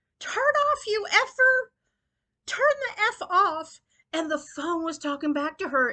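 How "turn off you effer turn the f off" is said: very high, drawn-out shrieking screaming. Retelling how Molly screamed at her GPS phone, imitating Molly screaming. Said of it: "she started screaming at the phone".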